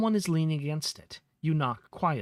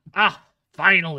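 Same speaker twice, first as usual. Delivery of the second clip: rough, gruff, very loud booming pirate shout; 2 semitones higher, 9 dB louder than usual. A pirate calls out as the listener is dragged toward him, gruff voice. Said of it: "A gruff voice calls".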